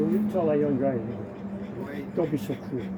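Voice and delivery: ordinary talk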